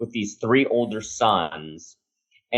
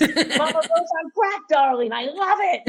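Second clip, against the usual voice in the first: put-on excited screaming, higher pitched. Retelling Lee Daniels' reaction to an idea: imitating Lee Daniels screaming. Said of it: "starts screaming".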